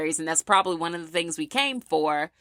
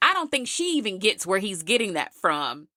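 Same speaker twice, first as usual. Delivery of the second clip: usual speaking voice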